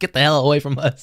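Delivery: comical yell. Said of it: "in, like, a comical way".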